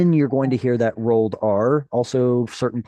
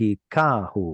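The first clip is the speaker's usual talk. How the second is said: second syllable ka of Hikahu stressed; 2 semitones lower, 3 dB quieter than usual. Teaching a word's pronunciation from a written mark: stress on second syllable ka. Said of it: "telling you to stress the second syllable".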